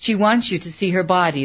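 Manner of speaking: ordinary delivery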